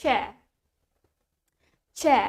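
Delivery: British accent, chair said without the R. Leading learners through a word, starting with the british version, british accent. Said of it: "starting from the British one".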